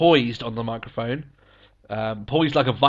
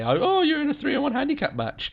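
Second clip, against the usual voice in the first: very high, swooping, sing-song mockery. Retelling how Triple H mocks Cena backstage: imitating Triple H mocking. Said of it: "he mocks Cena saying".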